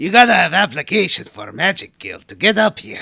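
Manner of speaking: very loud, booming alien creature voice. Speaker retells a character stopping the group at the transporter: Watto voice. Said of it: "Watto voice. So he's like".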